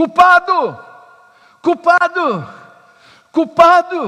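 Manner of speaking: piercing street cry, very high and very loud. Retelling a man running through chicago streets: imitating someone shouting.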